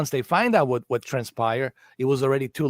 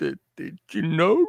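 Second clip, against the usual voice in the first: put-on drunken vampire voice, higher; 4 semitones higher than usual. Imitating how a film villain sounded: drunken Dracula voice. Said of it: "he sounded like, uh, drunken Dracula".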